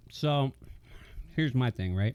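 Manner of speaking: speaking while chewing, mouthful of food. Asked for his pizza rating, he starts answering, talking with mouth full. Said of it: "I had a mouthful of pizza there".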